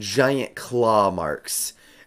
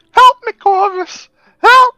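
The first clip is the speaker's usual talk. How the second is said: acted crying out, calling out loud; 14 dB louder than usual. In a role-play, a character calls to Corvus from within the ship, crying for help in character. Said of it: "would you mind giving me a "help, Corvus"?".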